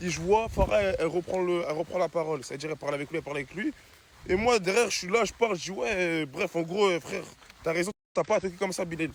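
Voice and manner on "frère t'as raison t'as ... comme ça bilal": ordinary talk, nothing marked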